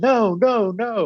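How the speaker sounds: repeated high yelling. Retelling someone on the sideline refusing again and again: retelling a yell. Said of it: "And he's like yelling".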